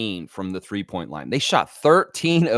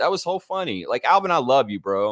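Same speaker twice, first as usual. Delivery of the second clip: usual speaking voice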